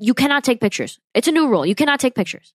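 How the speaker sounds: put-on high, aggressive, angry shouted yelling. Retelling the guards running out at them, imitating aggressive yelling. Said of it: "start yelling at us, like aggressively".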